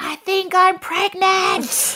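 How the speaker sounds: mock very high, drawn-out scream. Speaker retells announcing a pregnancy in Coles, retelling a scream. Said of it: "I'm screaming in Coles".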